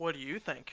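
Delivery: sarcastic, mocking delivery. Voicing a mimic's reply to a question about sleeping: sarcastic. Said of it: "It gives you a sarcastic".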